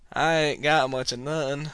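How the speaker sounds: put-on southern American accent. Recalling being asked where they're from and slipping into a fake southern accent. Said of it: "Why am I talking like this?".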